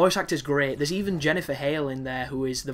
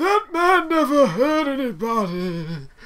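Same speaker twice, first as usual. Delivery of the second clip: very high, very slow, loud sobbing wail; 11 semitones higher, 8 dB louder than usual. Quoting a favorite movie line to a buddy, imitating a character crying. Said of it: "And he's all crying".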